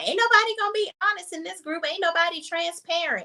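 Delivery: mock yell, high-pitched and fast.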